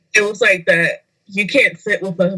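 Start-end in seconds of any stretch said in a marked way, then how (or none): none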